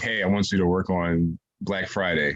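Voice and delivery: ordinary delivery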